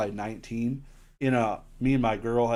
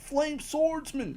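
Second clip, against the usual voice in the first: bad cartoon voice, pushed very high. Looking through card prices, a speaker says a card's name in a terrible Joey voice. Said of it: "That was a terrible Joey voice".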